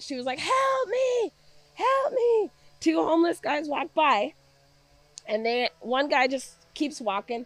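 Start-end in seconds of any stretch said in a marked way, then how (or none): 0.4-2.5 acted slow, drawn-out pleading cry, very high. Retelling what a woman in a tent cried out: imitating a cry for help. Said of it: "heard her crying out".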